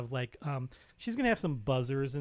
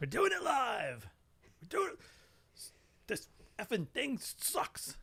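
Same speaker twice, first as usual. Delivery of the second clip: angry, fed-up anchor voice, pitched up, swooping; 9 semitones higher, 4 dB quieter than usual. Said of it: "And then you notice he does".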